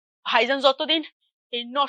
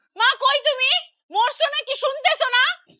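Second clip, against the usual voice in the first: loud yell. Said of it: "এরকম চিল্লাইতেছস কেন?".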